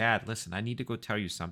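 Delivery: calm, chilly tone. Retelling what he said to his dad, retelling a cold, calm voice. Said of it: "my voice being super calm, super cold".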